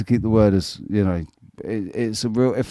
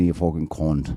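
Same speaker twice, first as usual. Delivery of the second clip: low, put-on, light touch of Irish accent; 5 semitones lower than usual. Explaining how to get away with swearing on TV, in a put-on Irish accent. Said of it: "put a little bit of an Irish accent on".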